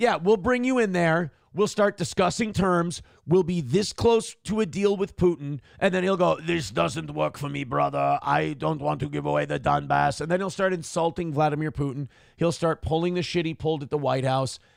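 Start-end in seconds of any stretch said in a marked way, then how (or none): 6.4-10.2 put-on Russian gangster voice. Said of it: "He sounds like Bond villain".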